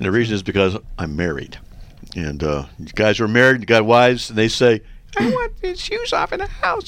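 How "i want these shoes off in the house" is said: very high-pitched, put-on female voice. A married man talking about shoes in the house, imitating his wife's voice. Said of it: "I can't do my wife's voice very well".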